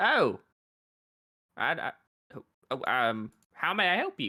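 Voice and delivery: slow, groggy, stammering, fumbling for words. Voicing a deputy who rustles awake from snoring: just woken up deputy. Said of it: "he kind of rustles awake".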